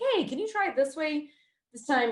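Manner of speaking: high-pitched, quick delivery.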